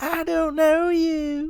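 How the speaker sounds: bad, very high, squeaky cartoon character voice. After a police officer impression, the speaker attempts a Bobby Hill impression. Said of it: "That's the closest Bobby Hill I can do".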